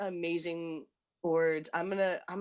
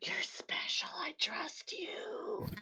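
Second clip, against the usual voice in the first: put-on boozy, wet, spitty drunken whisper; 11 semitones higher, 6 dB quieter than usual. Role-playing being very drunk, leaning over to whisper to Hazel: drunken whisper. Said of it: "like drunkenly whisper and probably spit on you a little bit".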